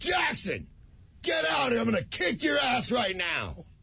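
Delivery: high-pitched, carrying yell. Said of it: "And I yelled".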